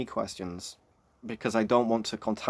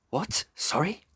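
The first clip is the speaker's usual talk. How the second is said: play-acted hostile, prickly, high, aggressive snap; 6 semitones higher than usual. Retelling how a woman answered a question about the last train, imitating an aggressive snap. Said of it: "so aggressive".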